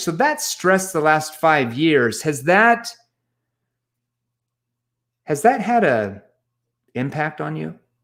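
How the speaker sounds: leading, probing tone with a verbal pause. Demonstrating an NEPQ probing question, probing tone with pause. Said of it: "See how I said that with my tone, the verbal pause there?".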